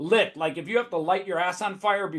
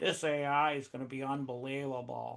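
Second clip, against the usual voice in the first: low, very quiet, flat, unexcited deadpan monotone; 5 semitones lower, 9 dB quieter than usual. Mocking Silicon Valley people who pitch in rooms, imitating a flat, unexcited monotone. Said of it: "come into rooms doing that".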